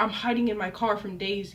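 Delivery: plain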